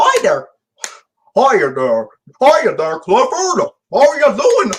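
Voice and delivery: high, goofy voice with swinging pitch. Discussing Mel Blanc's voices, speaker performs the Patrick the dog voice. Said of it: "that impression of Patrick the dog".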